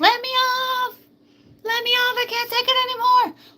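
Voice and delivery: acted very high tearful wailing, crying scream. Acting out a rider begging to get off, imitating someone crying and screaming. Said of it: "the one crying and screaming".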